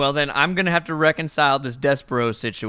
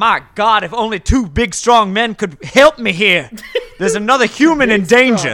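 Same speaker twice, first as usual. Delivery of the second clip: very slow, loud, drawn-out, desperate cry; 7 semitones higher, 7 dB louder than usual. Struggling to hold a patient's legs, calling for help: desperate plea. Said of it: "I'm gonna desperately, I'm gonna be like".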